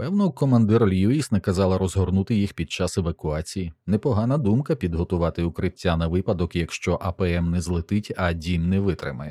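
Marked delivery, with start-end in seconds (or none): none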